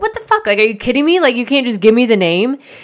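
mock exasperated, super annoyed, incredulous delivery. Recounting being told to fill out paperwork just to get a name, retelling being super annoyed. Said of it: "I was super annoyed".

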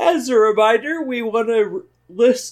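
words warped, spoken through a high yawn. Podcast host reading a reminder to listeners, yawning while talking. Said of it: "I couldn't read very well while I was yawning".

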